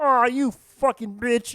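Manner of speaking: shrill, very high, loud cartoon frog puppet voice. Describing what the frog puppet never says on the show: Kermit the Frog voice. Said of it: "but you don't hear him go".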